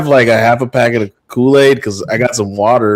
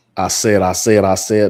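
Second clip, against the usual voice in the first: put-on southern rooster cartoon voice, lower; 5 semitones lower, 4 dB quieter than usual. Retrying an accent after being teased, doing a Foghorn Leghorn voice. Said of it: "Like Foghorn Leghorn over here".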